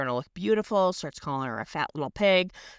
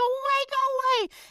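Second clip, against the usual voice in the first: mock terrified, frightened shriek, very high pitch. Recapping a show, quoting a girl cowering by the toilet, retelling a scream. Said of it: "starts screaming and she starts like covering".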